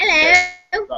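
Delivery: put-on English accent. Trying out an English accent after asking the others to: put-on English accent. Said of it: "Can you guys do an English accent?".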